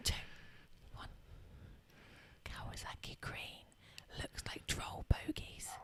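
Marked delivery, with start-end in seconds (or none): 2.4-5.7 slow, drawn-out, very quiet whisper. Told to whisper a sentence after a three-two-one countdown, whispered. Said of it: "and you're going to whisper".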